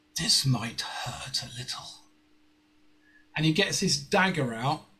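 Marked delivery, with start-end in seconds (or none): 0.2-1.9 hushed, soft, quietly menacing whisper. A mysterious figure bends down to a player's character before striking, whispering. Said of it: "he whispers".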